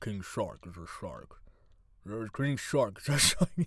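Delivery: put-on low, soft, mumbling movie-star voice. Trying out a celebrity impression: Sylvester Stallone mumble. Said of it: "let's see if I can do my Sylvester Stallone impression".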